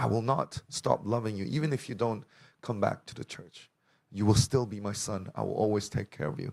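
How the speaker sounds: usual speaking voice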